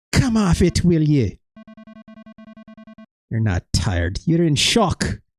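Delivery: bad, unconvincing, put-on Irish brogue. Performing a character's reply in an acted scene, in a bad irish accent. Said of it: "my Irish accent, which is bad".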